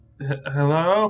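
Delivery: shy, hesitant, soft, timid voice. Voicing an unseen figure behind a door: timid, hesitant voice. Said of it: "a voice just very timidly ask".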